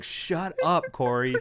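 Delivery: mock exasperated scream, high. Retelling watching a match on TV: imitating screaming at the TV. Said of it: "I was screaming at my T V".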